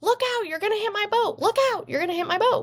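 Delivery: very high, rattled-off screaming. Telling a story of a meditating man as a boat flies at him, imitating someone screaming.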